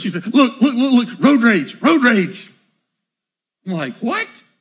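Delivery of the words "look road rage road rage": put-on excited tone, slower. Retelling his wife's words while he drives, imitating excited wife. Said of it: "she gets all excited".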